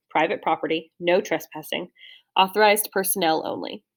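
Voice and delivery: ordinary talk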